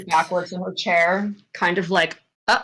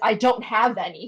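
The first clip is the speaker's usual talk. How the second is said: acted panicked character voice; 3 semitones higher than usual. Voicing a character who turns to another in panic: panicked character voice. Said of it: "she just turns to him in panic".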